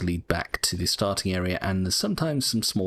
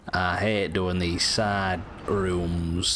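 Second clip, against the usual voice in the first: mopey, depressed, slow Northern English accent. Commenting on side rooms as a depressed character: glum northern english accent. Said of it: "I'm doing a depressed Northern English person".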